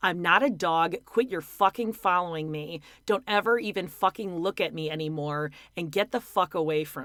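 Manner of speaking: ordinary talk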